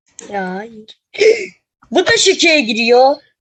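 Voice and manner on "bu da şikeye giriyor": mild shouted-out griping yell. Player talking to a friend during a game, shouting loudly. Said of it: "Bağırma lan. Kulağım çınladı".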